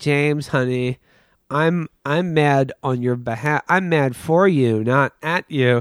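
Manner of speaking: slow, deliberate anime-style robot voice. Retelling how Raquel comforted James: Raquel's anime robot way. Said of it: "anime robot way".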